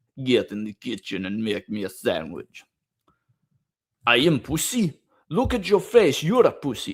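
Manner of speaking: animated, swooping, fake Russian accent. Reading lines aloud after saying he loves the accent: put-on Russian accent. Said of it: "I love the Russian accent".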